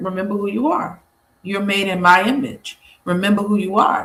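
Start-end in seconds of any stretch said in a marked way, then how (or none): none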